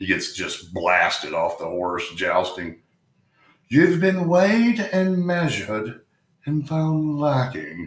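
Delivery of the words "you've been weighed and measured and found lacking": very high-pitched fake put-on British accent. Quoting a line from a jousting movie in a put-on British accent. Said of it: "I don't have a very deep British accent".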